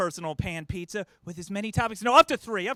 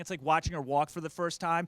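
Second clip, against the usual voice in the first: normal talking voice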